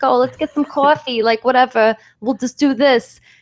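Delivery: put-on over-the-top Jersey accent. Imitating people from a nearby town, in an exaggerated Jersey accent. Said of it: "we're talking like this".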